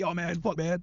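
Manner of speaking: mock nervous, shaky, trembling voice. Mocking another speaker for getting nervous: imitating someone shaky. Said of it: "getting all shaky".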